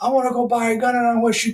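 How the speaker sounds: very high-pitched, angry yelling outburst. Retelling how a father yelled at barking dogs: imitating father yelling. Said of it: "He's like".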